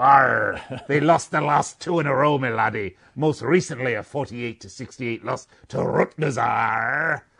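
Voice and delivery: pirate character voice. Giving Seton Hall Pirates results against the spread in a put-on pirate voice. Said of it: "I'm going to do this one in my pirate voice for you".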